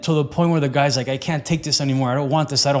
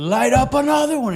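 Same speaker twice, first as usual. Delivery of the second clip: imitated scream, higher pitch; 10 semitones higher than usual. Retelling how a coach screamed at a smoker: imitating someone screaming. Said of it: "And he screams at him".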